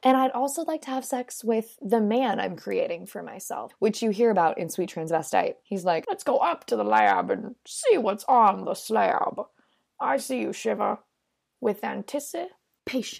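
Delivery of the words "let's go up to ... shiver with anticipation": slow, drawn-out, creaky character drawl. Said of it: "great impression".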